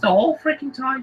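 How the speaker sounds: very high, odd put-on troll accent. Describing a family dressed as trolls, demonstrating their weird troll accent. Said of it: "talk in a weird accent like this".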